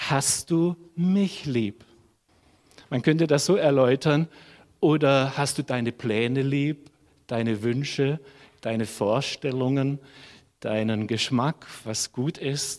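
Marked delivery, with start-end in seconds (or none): 0.0-1.8 heavy stress, leaning hard on mich. Quoting Jesus asking Petrus about love, stress on mich. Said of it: "Jetzt betone ich den Adressaten der Liebe".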